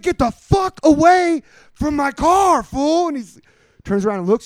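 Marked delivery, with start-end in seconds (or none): 0.0-3.1 put-on furious yell, higher, slower. Retelling yelling at a man trying to get into your car: retelling a furious yell. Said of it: "I fucking freak out".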